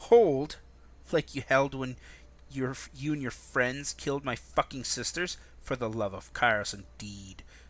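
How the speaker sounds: half-hissed through gritted teeth. She answers the bleeding man begging her to hold: hissed through clenched teeth. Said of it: "words escape her clenched teeth in half-hissed breath".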